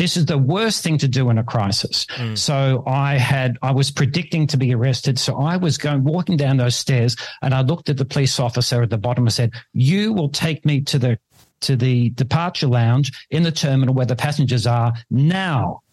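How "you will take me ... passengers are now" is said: ordinary delivery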